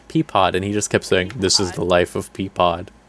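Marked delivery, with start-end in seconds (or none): 1.4-2.9 put-on anime-style storyteller narrator voice. Describing a show character who kept talking in the Kaguya narrator voice. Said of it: "Like in the Kaguya narrator voice".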